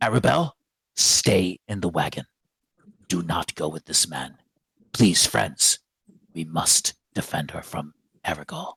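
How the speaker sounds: aggressive, forceful, insistent, accusing tone. Pointing a finger at a man, a character accuses him, quiet and aggressive. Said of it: "quietly, aggressively states".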